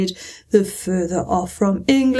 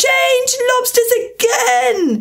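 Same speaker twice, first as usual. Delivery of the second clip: very high, top-of-lungs, full-voice yell; 14 semitones higher than usual. A creature calls out the next dance figure, yelling at the top of its voice. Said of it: "yelled the Griffin at the top of its voice".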